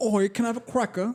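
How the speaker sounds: British accent impression. Asking a co-host for British impressions, then doing one: put-on British accent. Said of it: "What's your best British impression?".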